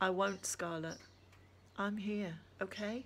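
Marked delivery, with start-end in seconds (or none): none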